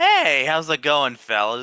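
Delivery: put-on loose, tipsy, casual and friendly drunken voice. Voicing a character who saunters over to strangers, acting casually drunk. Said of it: "casually saunters over like he's drunk".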